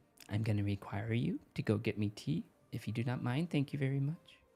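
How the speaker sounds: put-on creepy young girl voice. A player shows the group the voice she gives her character: creepy girl voice. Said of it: "like the creepy girl voice".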